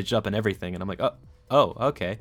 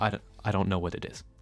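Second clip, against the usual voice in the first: grave, solemn, serious tone; 7 dB quieter than usual. Retelling how a healthcare professional answered their worry, imitating his serious tone. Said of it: "in like his serious tone of voice".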